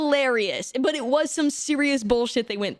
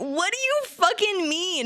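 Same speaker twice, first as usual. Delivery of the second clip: play-acted half-shout, pitched up, mild yell; 6 semitones higher than usual. Retelling meeting tall friends in person for the first time: retelling a yell. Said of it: "I literally yelled at them".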